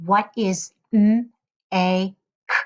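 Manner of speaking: flat robotic voice, "make" broken into single sounds. Speaker demonstrating a teacher's phoneme-blending prompt, robot voice with segmented sounds. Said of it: "when the teacher talks like a robot".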